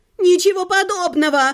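called out, projected across a large space. Narrator reads someone in the hall objecting from the right, shouting. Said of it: "закричали справа".

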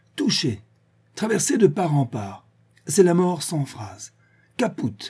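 high, tragic, stricken druid outcry. The old druid, facing his adversaries after the shots, crying out in a tragic voice. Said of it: "cria d'une voix tragique".

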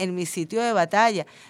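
ordinary delivery

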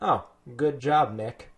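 insincere, mocking, dry sarcastic praise. Showing the usual way of saying things sarcastically: imitating own sarcastic tone. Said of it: "I didn't say it sarcastically, like whenever I'm like".

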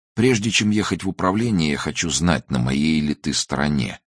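plain

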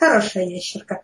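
unruffled, composed, unflappable droid voice. Playing a droid after the captain hissed and walked off, very, very quiet. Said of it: "Очень-очень-очень-очень тихо проговорил дроид".

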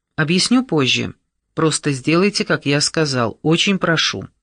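plain reading voice

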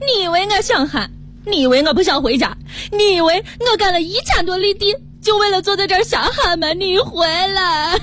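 high, tearful outburst in Shaanxi dialect.

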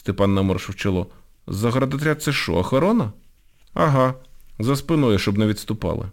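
plain

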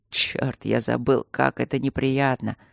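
grumbled through teeth. A man told to keep quiet and close his eyes; grumbling through teeth. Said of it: "сквозь зубы пробурчал Мартин".

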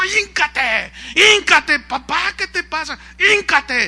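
high, loud, angry barked delivery.

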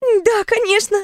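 very high, faltering, stammered, timid babble. A character answers the narrator's request to start from the beginning, babbled reply. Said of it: "пролепетала Кьяра Хорски".

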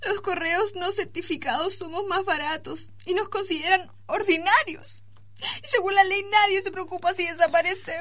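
tearful, crying voice, speaking through tears. A parcel interviewed about being lost, answering the reporter: crying. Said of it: "No llores, señora encomienda".

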